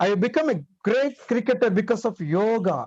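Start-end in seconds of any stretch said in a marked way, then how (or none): 2.2-2.9 stress on the word yoga. Explaining word stress with an example sentence, with stress on the word yoga. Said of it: "give more stress on the word yoga".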